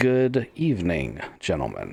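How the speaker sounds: cracked, parched rasp. Voicing a character who hasn't spoken in a long time: dry, hoarse, broken voice. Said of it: "sounds a little broken and and like his throat's dry and hoarse".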